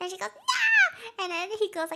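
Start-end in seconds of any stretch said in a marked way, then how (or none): 0.4-1.2 wild, shrill screaming, very high and loud. Retelling a TV scene where two characters scream at each other: imitating Nurse Cecily screaming. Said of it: "they begin wildly screaming at each other".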